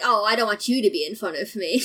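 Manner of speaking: ordinary talk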